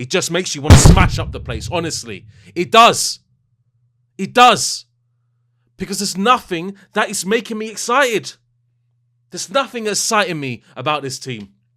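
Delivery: fuming, very loud, high-pitched angry rant. Speaker frustrated with his team's performances against Lille, angry. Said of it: "Sorry for getting angry".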